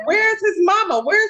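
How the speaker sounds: frantic, high, loud, repeated screaming. Retelling what a woman kept screaming before a fight, retelling a frantic scream. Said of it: "she kept screaming like".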